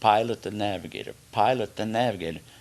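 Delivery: ordinary delivery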